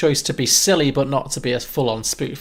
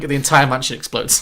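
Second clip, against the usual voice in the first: plain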